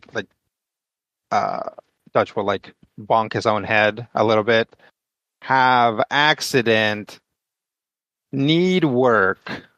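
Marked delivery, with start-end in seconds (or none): 5.4-9.6 slow, halting broken German, word by word. Speaking in character to a guard as Dutch: broken German. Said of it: "in broken German".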